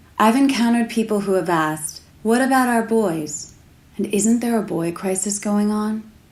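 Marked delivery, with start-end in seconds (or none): none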